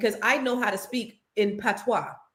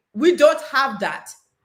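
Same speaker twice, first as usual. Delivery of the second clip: loud, put-on Jamaican accent, shown off; 4 semitones higher, 6 dB louder than usual. Competing with another speaker to do a Jamaican accent better, Jamaican accent. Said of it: "That's how Jamaicans talk".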